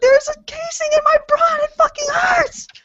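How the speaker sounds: shrill, very high-pitched, freaked-out panicked yell. Retelling what she said after dropping the gun: imitating her own panicked yell. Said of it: "I freaked out".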